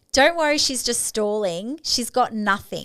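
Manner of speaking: ordinary delivery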